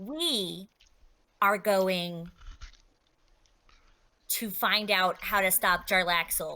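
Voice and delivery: plain, settled, even tone after an audible deep breath. Narrator voicing Rowan's words to the party, quieter tone. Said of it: "she's going to say in a quieter tone".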